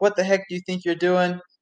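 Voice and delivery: light, acted-out yelling like a coach. Retelling a workout where the coach yelled at the runner: imitating a yelling coach. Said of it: "my coach was yelling at me".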